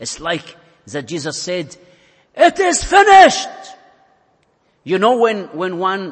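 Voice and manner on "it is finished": very high, very loud triumphant victory cry. Speaker retells a gospel scene, acting out a great loud cry. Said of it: "Jesus cried with a great voice".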